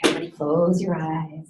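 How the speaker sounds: deep voice, dropped down an octave. Showing how to guide others to close their eyes: voice dropped an octave. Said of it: "Drop your voice an octave when you do this".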